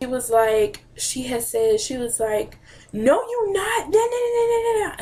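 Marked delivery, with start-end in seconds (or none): 2.9-5.0 mock fussing scold, very high pitched, angry. Retelling a grandmother's reaction to a coming out: imitating someone angrily fussing. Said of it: "She just started cussing and fussing".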